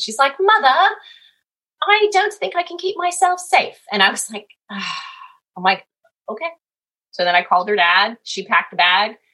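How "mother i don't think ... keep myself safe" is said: high-pitched, playful put-on British accent. Retelling what she said on getting back to the house, put-on british accent. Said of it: "So she had a British accent".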